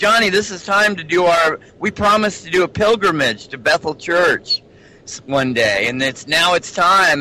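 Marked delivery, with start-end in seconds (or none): none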